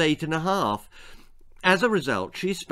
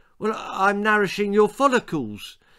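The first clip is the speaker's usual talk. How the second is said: defensive, self-justifying tone, pitched up; 5 semitones higher than usual. Sandra, asked what she is doing with the cream, answers defensively. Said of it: "she said defensively".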